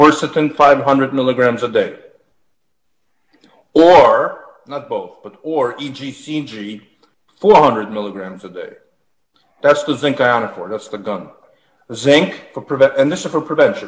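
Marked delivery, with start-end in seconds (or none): 0.0-8.7 slow, deliberate, measured dictation pace. Giving listeners daily doses to write down, said slowly. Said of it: "I'm going to say it slowly".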